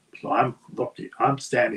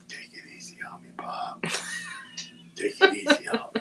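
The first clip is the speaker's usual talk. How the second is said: hushed, soft, secretive whisper; 5 dB quieter than usual. Retelling what his wrestling opponent whispered before the match, retelling a whisper. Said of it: "he whispered in my ear".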